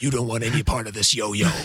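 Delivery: deep, dropped, low voice. Demonstrating the voice you shift into to get the guys' attention, Batman voice. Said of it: "You sound like Batman".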